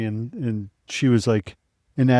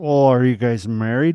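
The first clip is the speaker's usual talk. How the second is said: put-on drunk woman voice. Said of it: "and she's trashed".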